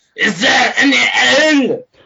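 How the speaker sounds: playful, half-hearted, high mild yell. Player's character walks up to the bartender, very booming screamed voice. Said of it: "in a very very booming voice and just scream at him".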